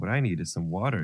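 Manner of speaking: plain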